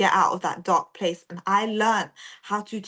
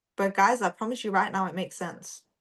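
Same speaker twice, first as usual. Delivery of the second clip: ordinary talk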